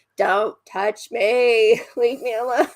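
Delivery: put-on frustrated, fed-up, loud, upset voice. Retelling how she answers a hug when frustrated: imitating being upset. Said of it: "frustrated or upset".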